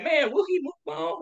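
mock exasperated aside, tossed off very high. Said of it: "I be like".

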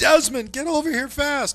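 high, loud, panicked scream.

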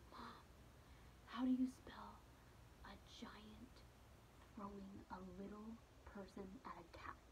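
put-on child's soft, hushed whisper. Mother retells her five-year-old whispering a question in her ear during a game, whispering. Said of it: "He whispers in my ear".

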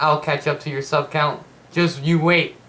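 ordinary delivery

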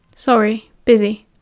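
ordinary delivery

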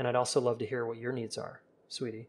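gentle, easygoing, soft, calm, relaxed tone. Showing how to open a talk about needs: calm relaxed tone. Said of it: "calm tone of voice and to be very relaxed".

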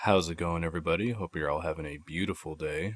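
whispering voice. Greeting viewers at the start of a video, whispering in their apartment; low whispering voice. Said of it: "I apologize for my low voice right now".

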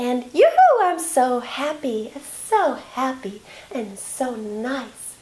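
very slow, bright, airy, light, happy voice. Explaining how everything goes up when we are happy: bright, light happy voice. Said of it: "it's so bright and light".

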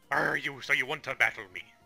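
put-on pirate voice. Reading out an enemy's lines in a game: pirate voice. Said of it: "Team Magma are all pirates".

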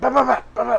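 mock attack yell, very high and loud.

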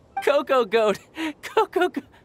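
speaking through laughter. Laughing hard at others who fell for a trick: laughing while talking. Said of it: "my sides hurt".

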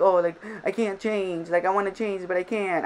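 put-on, self-mocking, teasing tone. Recalling her past videos, mocking her past self. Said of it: "I'm mocking myself".

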